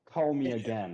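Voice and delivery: put-on elderly man's voice. Describing a spell that repeats words in an old guy's voice. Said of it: "in that one, uh, old guy's voice".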